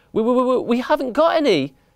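halting stammer. Daddy answers a mouse who has come to inspect cheese, stammered. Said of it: "stammered Daddy".

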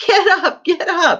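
very high cry through laughter. Narrator reads a line to passengers flung to the floor, crying out, roaring with laughter. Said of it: "cried Mr. Wonka, roaring with laughter".

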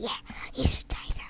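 quick secretive whisper.

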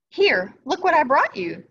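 pleased, proud. The mother toad speaks to her son, proud. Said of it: "said the toad proudly to her son".

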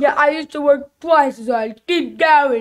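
tough movie-boxer voice. Playing a video game with a friend who asked for the Rocky voice, Rocky voice. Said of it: "Is he British? Not British, Rocky".

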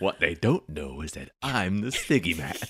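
weirdly sinister, menacing tone. Claiming to be the siggy man as a joke: weirdly sinister tone. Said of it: "Weirdly sinister".

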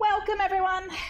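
shrill, very high, jittery, nervous shout. Opening the event and welcoming everyone: nervous shouting. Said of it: "Sorry I'm shouting now".

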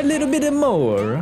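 very high, exaggerated, over-the-top Italian accent. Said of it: "a very good offensive Italian accent".

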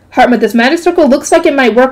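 ordinary delivery

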